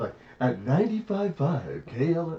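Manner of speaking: breathy radio host voice.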